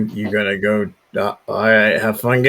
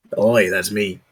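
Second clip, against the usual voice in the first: orc character voice. Narrating a scene, answering a player's question as an orc, in an orc voice. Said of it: "you are greeted by an orc".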